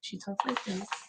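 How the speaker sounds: very soft, low-pitched voice. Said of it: "lower her voice".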